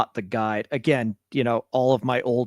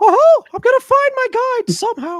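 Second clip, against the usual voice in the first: put-on cartoon mouse voice, much higher, louder; 7 dB louder than usual. After comparing the listener to Mickey Mouse in Fantasia, the speaker does a Mickey Mouse voice. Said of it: "that voice".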